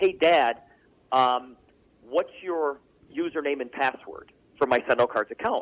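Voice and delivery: ordinary talk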